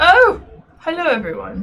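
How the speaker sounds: hearty, loud, high-pitched.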